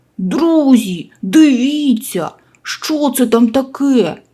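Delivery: abrupt, sudden exclaiming, drawn out. A piglet walking forest paths with friends spots something; sudden exclamation. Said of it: "кабанчик вигукнув".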